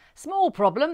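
bright, very loud, high, cheerful call. A man calls a crisis meeting before the group heads out: cheerful. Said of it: "he said cheerfully".

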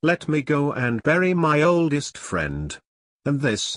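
plain reading voice

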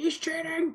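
high, pretend yelling.

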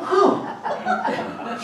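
high, breathless, stunned huh.

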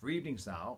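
plain

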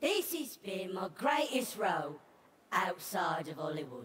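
inauthentic put-on British accent. The Badger gives the panel one final clue; fake British accent. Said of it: "That is not an authentic British accent".

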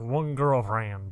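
put-on country accent. Retelling a friend's answer to a question, imitating Purple's country accent. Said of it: "Complete with country accents".

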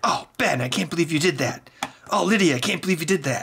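high, aghast, appalled mother voice. Retelling mom's reaction to a violent video game: imitating mom sounding appalled. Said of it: "She was appalled at it".

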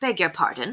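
plain reading voice

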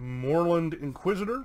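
normal talking voice

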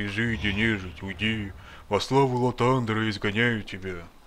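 dreary, lifeless, dull, gloomy drone. Acting out a glum-faced priest banishing undead, dull gloomy delivery. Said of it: "так уныло говорит".

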